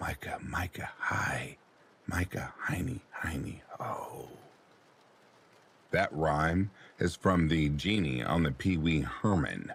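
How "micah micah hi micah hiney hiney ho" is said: put-on whisper, quieter. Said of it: "she continues the rhyme in a whisper".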